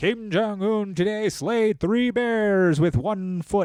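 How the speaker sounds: very high, booming, authoritative announcer voice. Describing north korean state media, playing the lady announcer: north korean state media announcer. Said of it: "they'll have some lady come out and be like".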